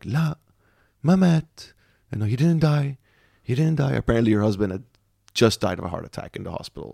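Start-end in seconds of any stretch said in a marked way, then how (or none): 0.1-3.9 abrupt switch from sobbing to calm, high voice. Retelling a woman behind a curtain in the ER: imitating her suddenly going quiet. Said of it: "just goes quiet and just goes like".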